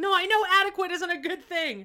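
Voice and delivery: very high, loud, high-pitched angry outburst. Retelling a sitcom episode's ending: imitating Phil Hartman's angry blowout. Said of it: "he has this big blowout".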